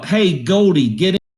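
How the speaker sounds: hailing call. Voicing a character calling someone over from another room: yelling. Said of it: "and I yell".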